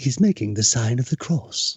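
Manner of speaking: put-on narrates like an old nature documentary narrator. Reading out a photo description as a documentary: David Attenborough voice. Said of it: "your best David Attenborough voice".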